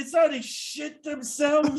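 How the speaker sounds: acted elderly New York accent.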